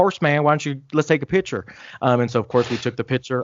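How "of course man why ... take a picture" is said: put-on North Carolina accent. Retell his reply when you begged for a picture, in Jeff Hardy's North Carolina accent. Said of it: "he said that had that North Carolina accent".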